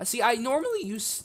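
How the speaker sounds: voice cracking up high mid-phrase. Narrating while building a bridge in a game, voice cracks. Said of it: "Oh, voice crack".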